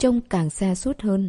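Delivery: ordinary delivery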